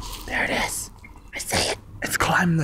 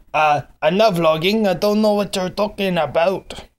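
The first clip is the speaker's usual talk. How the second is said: put-on talking-dog voice with an accent; 3 semitones higher, 6 dB louder than usual. Vlogger speaks as his dog Ozzy, answering a question, in Ozzy's voice. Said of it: "Your accent just changed".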